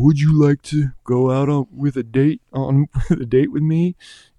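put-on slurred speech. Pitching a ride scene where Naven asks someone for a date, slurring like Naven. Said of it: "He's slurring his word".

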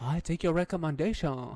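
mock, put-on Korean accent.

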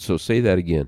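ordinary talk

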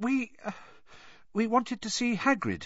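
rather small, very high little voice. Suddenly face to face with someone unexpected, a girl answers: rather small voice. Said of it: "said Hermione in a rather small voice".

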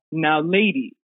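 very proper, very deep male voice. Retelling a voice heard during a scary moment; very proper, very deep voice. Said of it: "very proper, very deep. Like, obviously a man's voice".

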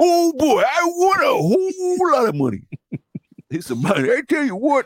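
very high, swooping miner voice with a bouncing tune. Playing a bum who has won a lot of money, sounding like a miner. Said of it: "my bums had to sound like a miner".

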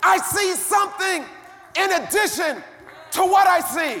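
loud preaching shout.

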